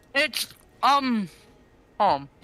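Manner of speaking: talking with mouth full. Answering a question mid-bite, the speaker talks with mouth full. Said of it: "Sorry, I had my mouth full".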